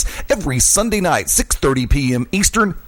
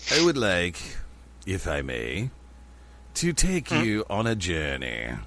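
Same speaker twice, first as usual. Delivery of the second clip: deep, low, slow, measured delivery; 6 semitones lower, 11 dB quieter than usual. Opening a segment on the radio show, Alfred Hitchcock voice. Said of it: "I was actually going more for Hitchcock".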